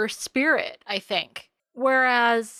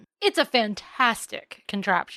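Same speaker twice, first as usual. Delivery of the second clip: ordinary talk, nothing marked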